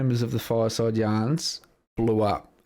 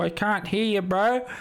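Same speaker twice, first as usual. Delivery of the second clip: drawn-out, high-pitched, slow heckling taunt; 10 semitones higher than usual. Imagining heckling a speaker from the crowd: Reese impression. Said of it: "That's the perfect Reese impression".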